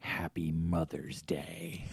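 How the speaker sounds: loud theatrical whisper. Retelling waking up to the wife closing the door: imitating a whisper.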